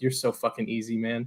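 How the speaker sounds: hushed, taunting half-whisper. Retelling what one man half-whispered to another while watching clips, a half-whispered taunt. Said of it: "he just whispers to Rodgers like".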